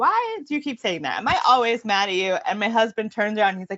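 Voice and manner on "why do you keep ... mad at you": mock fed-up, exasperated, swooping annoyed delivery. Retelling a reply to a child who keeps saying the same thing: retelling being annoyed. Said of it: "annoyed and I was like".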